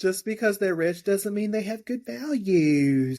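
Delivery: lilting, stretched drawl. Quoting a show character's favorite line, the speaker imitates her lilt and drawl. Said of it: "That lilt and that drawl".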